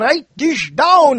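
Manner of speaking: loud, high, cartoon Austrian professor-style accent. Show listeners exactly how the crazy professor sounded, as a Dr. Fablianek impression. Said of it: "I imitate him".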